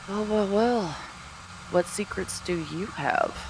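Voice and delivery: high, sidelong, half-to-herself aside. Speaking in character toward the Goliath: said under her breath. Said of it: "She says, like, kind of under her breath".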